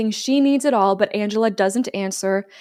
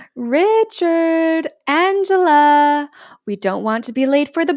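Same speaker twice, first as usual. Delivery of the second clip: slow, high call with a stretched-out name; 6 semitones higher, 5 dB louder than usual. Retelling how a woman called her kids from the stairs, imitating how she talks. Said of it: "I'm going to talk like she talks".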